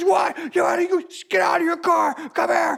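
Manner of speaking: acted-out, very high-pitched, taunting yell. Retelling a road-rage story, the speaker is imitating a man screaming at another driver. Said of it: "And he's screaming and yelling".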